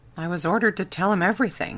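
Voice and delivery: ordinary delivery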